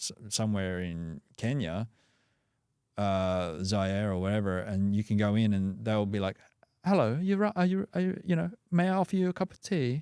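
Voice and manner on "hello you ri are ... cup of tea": very high, strong put-on British accent. Describing people greeting visitors in Kenya, the speaker imitates them, British-sounding accent. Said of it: "they can s- sound very British".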